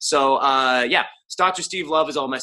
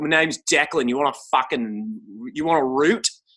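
put-on casual Australian man's accent; 2 semitones higher than usual. Imitating what Australian guys say: put-on Australian accent. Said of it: "what Aus-, Aussie guys say".

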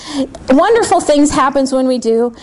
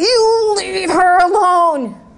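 big voice, very slow and deliberate; 5 semitones higher than usual. Retelling a deliverance over an unconscious woman; big voice. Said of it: "In this big voice".

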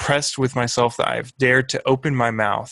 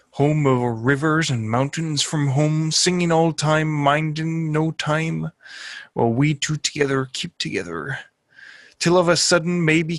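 put-on old sea captain voice; 4 semitones higher than usual. Standing on the deck, speaking out to the sea, old sea captain voice. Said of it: "read it like an old like sea captain guy".

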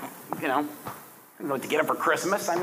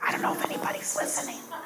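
quick quiet whisper. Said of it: "Mom, why are you whispering?".

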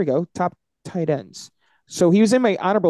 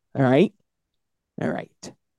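ordinary delivery

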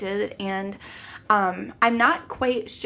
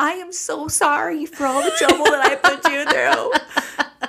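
play-acted tearful crying, high and drawn out; 6 semitones higher, 5 dB louder than usual. Retelling an apology called in to mom, imitating own past crying. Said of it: "I have called my mom crying".

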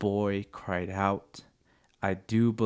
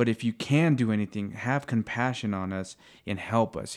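usual speaking voice

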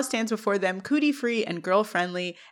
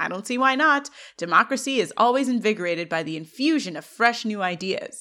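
normal talking voice

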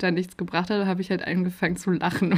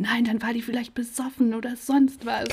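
mock-furious ranting, higher pitch; 4 semitones higher than usual. Retelling a man's reply about what his assistant said, retelling an angry outburst. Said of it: "Und dann rastet er super aus".

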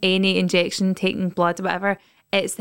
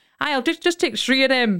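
put-on pitched-up, chatty older man's voice; 5 semitones higher than usual. Recalling an older man in a bowling club: imitating an older man's speech. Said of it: "heard an older man going".

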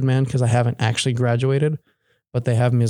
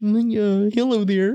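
put-on puppet voice, much higher; 9 semitones higher than usual. Trying out a voice in conversation: Little Kermit voice. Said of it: "Little Kermit".

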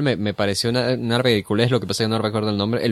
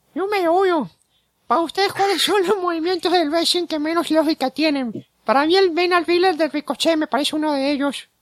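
very high, cute voice. Reading a listener's question aloud as asked, in a Chabelo impression. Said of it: "Esa es mi imitación de Chabelo".

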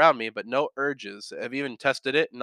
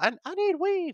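strung-out voice, pitched very high. Comparing own craving to a cocaine addict, scratching: Tyrone Biggums impression. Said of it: "like Tyrone Biggums from, uh, Dave Chappelle".

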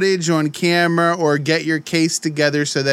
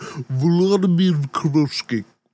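stuffy, congested head-cold voice. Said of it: "say it like you got a code".

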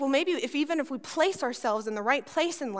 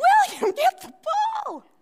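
very high, loud, supportive cheering; 7 dB louder than usual. Retelling the church crowd urging a boy on: imitating a cheering crowd. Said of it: "We're all cheering".

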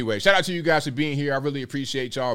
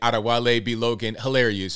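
ordinary talk

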